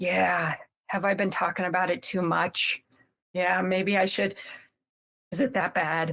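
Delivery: unsure, self-conscious, insecure and doubting tone. Retelling a friend's reply to the bot: imitating an insecure friend. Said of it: "The friend gets really insecure".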